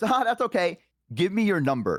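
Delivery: firm, stern, no-nonsense, pitched a bit high. Retelling a woman asking again for the phone number, imitating a stern voice. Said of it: "a little bit more stern of a voice".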